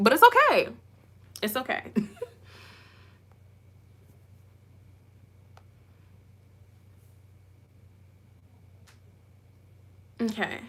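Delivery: angry, on the verge of tears. A speaker says she is so angry she is going to cry; close to tears from anger. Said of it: "I literally am gonna cry because I'm so angry".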